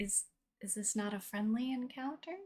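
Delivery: very high, hushed half-whisper aside. Asking Winston in character whether the encounter is friendly: half-whispering in character. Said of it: "I whisper to Winston".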